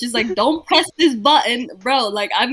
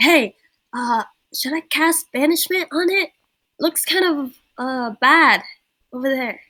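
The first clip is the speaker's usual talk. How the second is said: whispering, pitched higher; 3 semitones higher than usual. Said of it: "so I whispered to the closest person".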